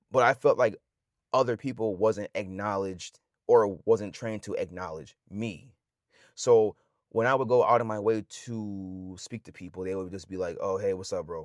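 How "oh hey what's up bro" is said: mock curt, dry, short delivery. Describing how people answered their greetings; imitating a short, dry greeting. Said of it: "real short, real dry".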